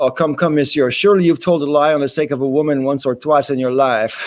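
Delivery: plain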